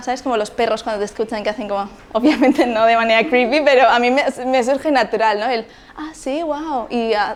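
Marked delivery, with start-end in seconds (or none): 6.0-6.9 high, soft, warm, engaged, encouraging voice. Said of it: "inclinar la cabeza ... me surge natural".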